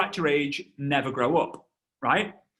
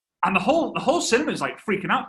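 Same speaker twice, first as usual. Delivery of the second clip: usual speaking voice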